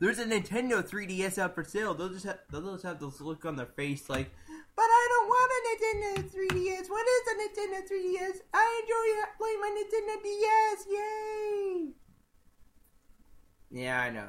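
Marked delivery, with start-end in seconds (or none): 4.7-11.9 put-on little kid voice, much higher and slower. Imagining how kids would answer news of a new console, in a little kid voice. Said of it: "my impression of a little kid talking".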